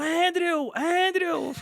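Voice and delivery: put-on, high, cheering fan shout. Retelling cheering in the cinema: imitating own shouting. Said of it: "fiquei gritando".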